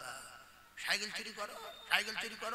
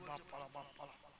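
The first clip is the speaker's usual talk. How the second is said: low, soft, frightened cow voice. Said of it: "এ গরু বলছে".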